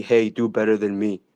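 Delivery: ordinary talk, nothing marked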